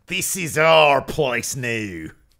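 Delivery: put-on loud, angry Australian accent. Recapping a backstage promo, the speaker does a mock-angry Peyton Royce Australian accent. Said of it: "angriest Australian accent I've ever heard".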